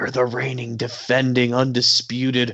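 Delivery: put-on, hype-man style whisper. Imitating someone whispering a champion's praise into a wrestler's ear: imitating Paul Heyman whispering. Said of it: "just whispering in his ear like".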